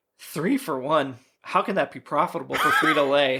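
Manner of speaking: put-on dry, flat, expressionless deadpan delivery. Retelling a character's line from a show, imitating a deadpan delivery. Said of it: "he's like deadpans that".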